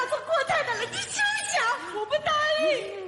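fake sobbing wail.

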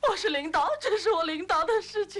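very high-pitched, tearful, sobbing protesting tone. In a drama, a leader told not to cry answers back, crying. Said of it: "您不要哭".

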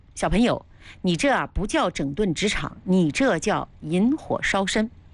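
normal talking voice

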